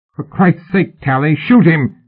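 rough-guy hollering shout, pitched high. Narrating, a ruffian calls to Tally as Fraser makes an arrest: shouting. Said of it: "shouted the muffled ruffian".

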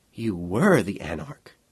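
plain reading voice

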